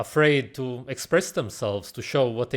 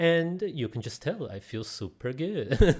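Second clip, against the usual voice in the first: mocking put-on fake-calm voice, higher pitch; 4 semitones higher than usual. Mocking a speaker in the video he calls fake: imitating his fake calm talk. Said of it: "That's why he talks like this".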